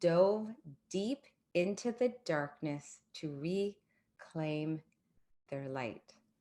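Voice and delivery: slow, deliberate reading. Rereading a quoted line aloud so it sinks in for listeners, read slowly. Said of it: "I want that to sink in".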